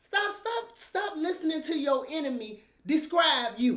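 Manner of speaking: agitated, worked-up pleading, loud and high. Urging listeners to stop listening to their enemy: upset. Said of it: "I'm getting upset".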